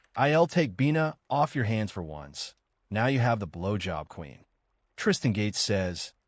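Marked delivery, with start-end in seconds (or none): none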